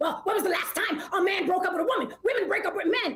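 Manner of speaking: put-on sarcastic, mocking, parroting tone. Mimicking the other speaker's earlier words back: mocking imitation of other speaker. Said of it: "Did I say it like that?".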